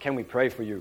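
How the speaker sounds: large, full voice. Retelling how a very big man, hand on his shoulder, asked him; big voice. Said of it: "In this big kind of voice".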